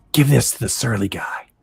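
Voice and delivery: soft, hushed whisper under the breath. Narrator voices a man dropping a note beside the notebook, whispering. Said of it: "you hear him whisper".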